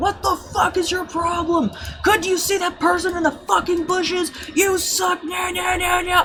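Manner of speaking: put-on, very high, shrill screaming. Retelling someone screaming at them in the background, imitating someone screaming. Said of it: "just screaming at me in the background".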